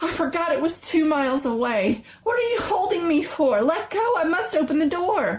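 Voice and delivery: high, frantic, feverish, desperate, hysterical pleading voice. An old woman struggles against the old man holding her arm, feverish and hysterical.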